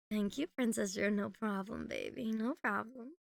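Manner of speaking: playful put-on mommy voice, caring and nurturing. Showing the mommy voice after being called princess drew: put-on mommy voice. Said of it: "The mommy voice".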